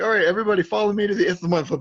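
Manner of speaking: put-on shout. Telling a story, the speaker acts out what another person has to shout: retelling a shout. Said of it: "Claire's got to shout like".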